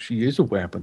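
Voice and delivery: very low, hushed, quiet under-breath mutter. Speaking in character about a fellow adventurer: muttered under breath. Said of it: "Under my breath".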